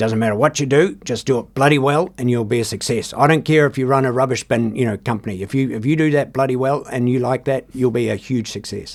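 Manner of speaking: stern, gruff man's voice. Retelling what a man once said to him, in Ray Wallace's gruff, stern voice. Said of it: "he had a really gruff, stern voice".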